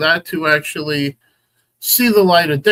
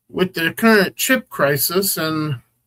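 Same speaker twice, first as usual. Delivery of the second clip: ordinary talk, nothing marked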